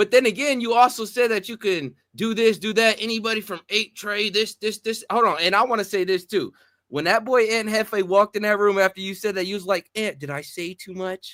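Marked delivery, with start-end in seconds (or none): 10.0-11.3 play-acted soft, slow, small, scared puppy voice. Retelling what the other speaker said when Ant walked in: imitating a scared little puppy. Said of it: "You sound like a scared little puppy".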